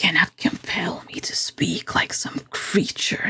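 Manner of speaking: whispered, soft, slow growling serpent voice. Narrating an adventure, voicing the water serpent: growling serpent voice. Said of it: "it growls".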